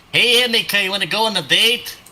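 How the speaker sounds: high-pitched shout, calling out. Playing a character who calls through a magic ring: shouting into a ring. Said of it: "I'm gonna shout into my ring".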